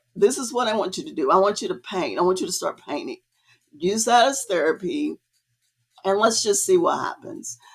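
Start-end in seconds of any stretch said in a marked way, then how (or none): none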